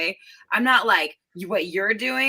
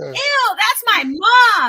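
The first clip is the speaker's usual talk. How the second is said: very loud, piercing, shrill, high holler; 9 dB louder than usual. Retelling yelling at men who hit on the speaker's mom, retelling a yell. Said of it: "and I yelled".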